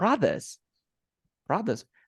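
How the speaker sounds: produce with stress and high pitch on PRO.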